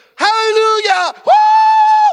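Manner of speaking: shrill, very loud, very high shout with long woo. Retelling how a grandma in the back suddenly shouted: imitating a grandma shouting. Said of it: "starts shouting like that".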